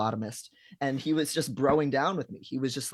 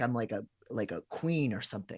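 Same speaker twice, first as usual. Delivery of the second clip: normal talking voice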